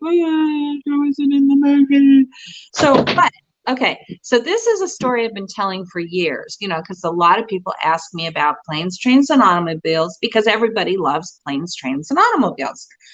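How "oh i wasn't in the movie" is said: mock weeping, tearful, words dragged out very slowly. Retelling leaving the screening after being cut from the film: imitating own past crying. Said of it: "and I'm, like, crying".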